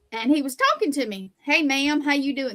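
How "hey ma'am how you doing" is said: put-on strong, heavy Southern accent. Retelling a tall guy greeting the speaker in line: imitating a strong Southern accent. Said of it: "but he was real Southern".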